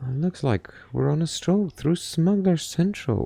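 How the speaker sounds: quiet, hushed, held-down voice. Narrator reading Carter's line as they wait for Long Way; keeping her voice low. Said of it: "Carter keeps her voice low".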